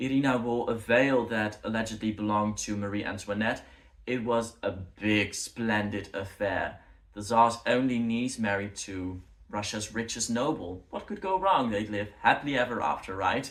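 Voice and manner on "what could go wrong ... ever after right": ironic, mocking, sarcastic tone. Narrating a royal wedding story, in a sarcastic tone. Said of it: "I'm using a sarcastic tone if you can't tell".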